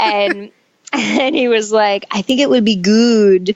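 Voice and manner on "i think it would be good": heavy put-on French accent, well drawn out. Retelling a man's reply about how the waves look, in a thick french accent. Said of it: "In his thick French accent".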